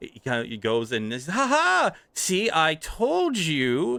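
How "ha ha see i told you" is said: very high, slow, drawn-out gloating triumphant yell. Narrating a scene, speaker voices a young tiefling boy, yelling out. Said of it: "He yells out".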